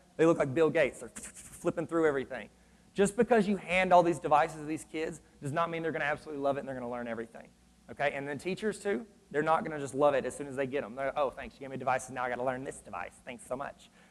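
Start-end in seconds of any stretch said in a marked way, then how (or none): 11.2-13.9 soft, grudging, grumbling, complaining tone. Talking about teachers getting new devices, imitating a complaining teacher. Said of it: "That's how they talk".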